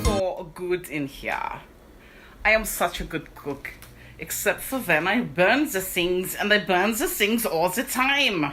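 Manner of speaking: put-on German accent. Cooking and joking about own cooking: put-on German-ish accent. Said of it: "that was a slightly offensive Germanish accent".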